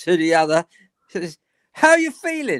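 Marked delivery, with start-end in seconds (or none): 1.7-2.6 put-on northern English accent, pitched high. Retelling what one football fan said to another, northern accent. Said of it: "in his northern accent".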